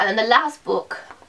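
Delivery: breaking voice, cracking mid-phrase. Moving on to the last book, the speaker's voice cracks. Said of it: "my voice just cracked there".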